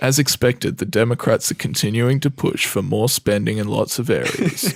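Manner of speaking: dull news reporter delivery. Podcast co-host asked to say the news like a bored news reporter. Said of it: "say it like a bored news reporter".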